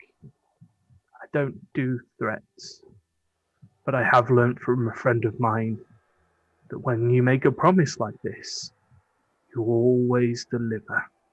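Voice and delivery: hushed whisper. Voicing a character who threatens a nine-foot lich: whispering. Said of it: "he just sort of whispers up and goes".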